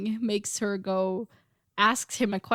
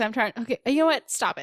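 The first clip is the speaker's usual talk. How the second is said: usual speaking voice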